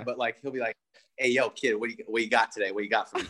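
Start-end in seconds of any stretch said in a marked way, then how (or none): 1.2-3.2 sudden, fake, put-on New York accent. Quoting a Florida guy's sudden weird speech, in a put-on New York accent. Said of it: "he has this weird, like, New York accent that comes out of nowhere".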